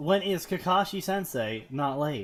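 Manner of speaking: ordinary talk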